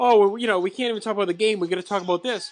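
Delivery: fake blubbering, high, whiny crying voice. Mocking a sportscaster who complains about covering a fight: mock crying, imitating Chris Berman. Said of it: "Chris Berman's on that crying like".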